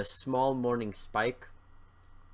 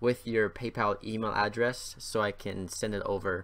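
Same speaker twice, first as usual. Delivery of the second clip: ordinary delivery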